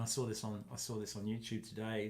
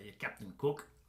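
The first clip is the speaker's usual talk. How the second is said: put-on local North Queensland Australian accent. Showing how people in North Queensland speak: imitating North Queensland accent. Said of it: "the people in North Queensland speak like this".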